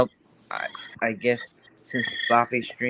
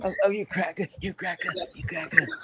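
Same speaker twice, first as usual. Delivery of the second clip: whispered, breathy; 8 semitones higher, 7 dB quieter than usual. Showing the others an impression of Eric: impression of Eric. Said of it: "Let me do my impression of him".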